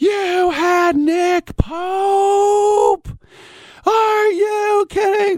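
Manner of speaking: very high, breathy excitement, "Pope" drawn out. Retelling another man's reaction to hearing about a show guest, breathing a retold scream. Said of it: "I'm breathing it, but he was screaming it".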